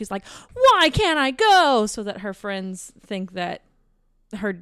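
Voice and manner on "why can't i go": very slow, loud, high-pitched speech. Retelling how she complains so her friends hear: imitating her talking loud. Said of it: "but then she'll talk loud".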